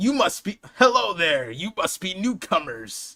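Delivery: attempted put-on Viking character voice. Voicing a character greeting newcomers, in an attempted Viking voice. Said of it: "I need a Viking voice".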